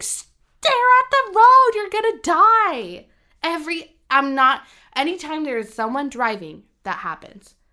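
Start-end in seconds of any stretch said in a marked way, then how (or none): 0.0-3.0 very high shrieking scream with stretched "die". Retelling shouting at a phone during a driving scene: retelling screaming at phone. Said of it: "I'm literally screaming at my phone".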